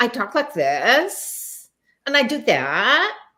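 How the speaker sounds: mock creaky voice. Speaker describing a habit common in young people, imitating vocal fry. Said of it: "It it almost becomes a fashion".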